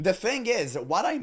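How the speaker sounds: voice breaks mid-phrase on what I. Speaker making a point about World of Warcraft, voice cracking. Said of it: "what a voice crack".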